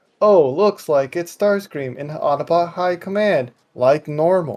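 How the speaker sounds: sarcastic, mocking delivery. Discussing a cartoon episode, quoting Bee's remark to Prowl, imitating Bee's sarcasm. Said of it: "Bee sarcastically goes".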